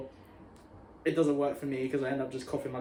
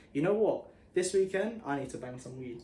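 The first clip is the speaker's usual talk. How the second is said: ordinary delivery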